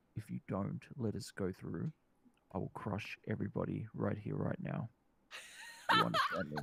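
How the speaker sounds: menacing, put-on whispered voice. Threatening a character in a game, in character: whispered threat. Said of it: "I'm gonna whisper in his ear".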